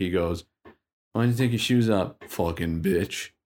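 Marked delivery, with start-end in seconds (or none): 1.1-3.3 put-on jeering, derisive, mocking tone. Retelling how a man in a sauna mocked the lifeguard: imitating someone mocking. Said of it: "mocking the lifeguard".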